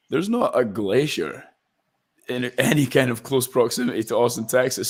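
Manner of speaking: ordinary delivery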